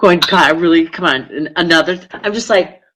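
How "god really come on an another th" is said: normal talking voice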